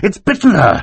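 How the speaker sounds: shrill panicked babble at a very high pitch. A narrator reads mr. poe's line as the others gasp and stare, crying out, babbling. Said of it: "he cried".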